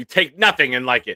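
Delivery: put-on loud, angry, aggressive Massachusetts accent. Host reading a viewer's poll comment aloud: Bill's mock-angry Massachusetts accent. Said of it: "in a very aggressive, angry Massachusetts tone".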